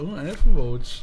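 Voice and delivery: slow, drawn-out sarcastic "oh".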